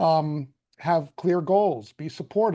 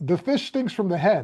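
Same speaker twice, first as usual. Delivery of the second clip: put-on thick Italian accent, old man voice. Speaker quoting a saying the speaker's grandfather used to say, heavy Italian accent. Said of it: "in a heavy Italian accent".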